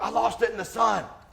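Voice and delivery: mock sharp angry snap, very high and raspy. Retelling snapping back at the coach after missing a ball: retelling an angry snap. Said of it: "I turn and I snap".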